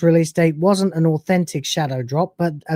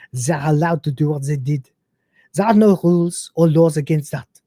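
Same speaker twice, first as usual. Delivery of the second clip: put-on French accent laid over English. Reading out a game director's interview answer, in a put-on French accent. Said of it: "I'm hearing it in a French accent now".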